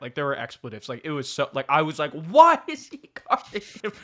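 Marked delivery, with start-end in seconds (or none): 2.1-3.9 very high, loud, yelled-out scream. Retelling a game, calling out to Pop from the stands: imitating own screaming. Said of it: "But I was screaming it".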